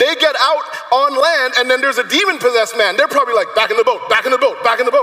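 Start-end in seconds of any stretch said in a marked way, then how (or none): 3.6-5.0 scared, frightened, fast rattled-off repetition. Acting out the disciples rushing back to the boat: imitating afraid disciples. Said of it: "They're afraid".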